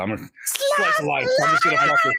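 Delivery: mock high-pitched shouted announcer voice.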